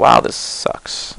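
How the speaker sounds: slow, whispered, frustrated, fed-up voice.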